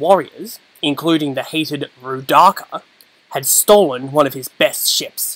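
plain

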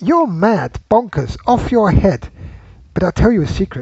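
mock female-sounding voice. Asked for a recognizable female voice in a guessing game, Alice impression. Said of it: "come up with a female accent".

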